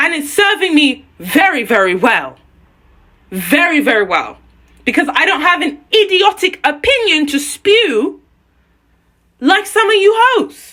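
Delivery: emotionally charged, heated, angry ranting outburst. Addressing the hosts directly: emotionally charged and angry. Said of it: "I know I sound very emotionally charged and angry".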